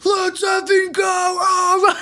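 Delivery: very high, full-throated scream at the top of lungs. Jet fan retells celebrating the win at home; retelling own screaming. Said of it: "I was like screaming at the top of my lungs".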